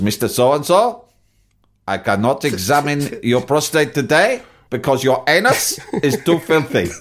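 put-on unemotional German accent. Retelling what a german doctor said: imitating a german doctor, straightforward, unemotional. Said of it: "in that very German, straightforward, unemotional way".

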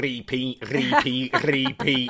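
put-on Manchester accent. Retelling how he said repeat, imitating his Mancunian accent. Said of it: "I cannot get over how Mancunian he is".

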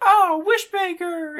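hollering cry, pitched very high. Retelling a movie scene where Jirachi wakes up: imitating Jirachi hollering. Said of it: "he starts hollering about".

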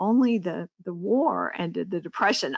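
kind of low, embarrassed, apologetic voice. Mimicking what progressives say, in a kind of low voice. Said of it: "in a kind of low voice".

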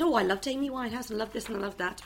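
usual speaking voice

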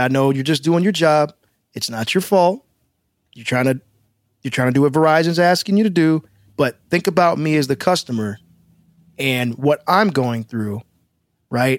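usual speaking voice

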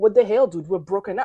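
ordinary delivery

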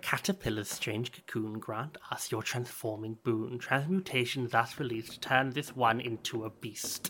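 speaking in a hushed whisper. Two figures take turns speaking, looking straight at the listener, in a hushed whisper. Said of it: "They both start talking like in a hushed whisper".

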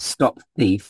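normal talking voice

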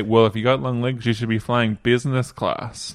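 ordinary talk, nothing marked

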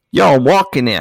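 put-on New York accent. Joking about New York-style pizza: put-on New York accent. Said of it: "to get into the accent".

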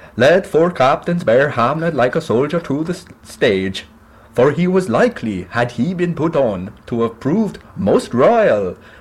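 put-on high-pitched Norwegian accent. Acting the closing lines of Hamlet as Fortinbras, in a Norwegian accent. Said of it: "That's the Norwegian accent we're going with".

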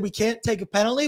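ordinary talk

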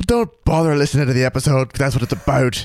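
put-on attempt at an Irish accent. Answering the co-host, in an attempted irish accent. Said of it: "Was that your attempt at an Irish accent?".

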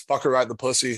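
ordinary talk

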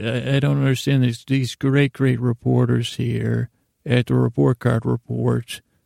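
ordinary delivery

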